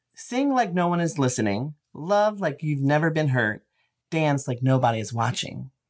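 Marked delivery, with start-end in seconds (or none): none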